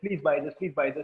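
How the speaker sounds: normal talking voice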